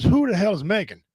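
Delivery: normal talking voice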